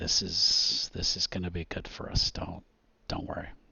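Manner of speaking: quiet, hushed, private-sounding whisper. In a game scene, a character steps beside a companion and whispers to her. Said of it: "he whispers to her".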